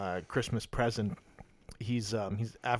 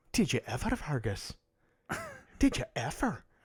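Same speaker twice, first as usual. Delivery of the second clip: put-on Irish accent, pitched up, swooping sing-song tune; 5 semitones higher than usual. Recalling someone from dialect class and quoting them: irish accent. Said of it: "that's my Paktikan the Havid Yad of Irish accents".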